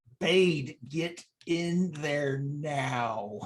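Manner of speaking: very slow, pained, forced through clenched teeth. Playing a character in pain and trying not to show it, give an order through gritted teeth. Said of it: "I'm like like gritting through my teeth".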